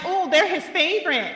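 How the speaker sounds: sassy, acted-out tone. Retelling how someone talked back over here, mock-sassy. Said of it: "saying some sassy shit".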